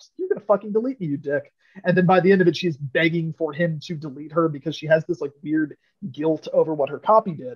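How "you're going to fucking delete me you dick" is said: angry, indignant, pissed-off outburst. Retelling a game's plot, quoting the new AI: imitating someone pissed off. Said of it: "She gets all pissed off".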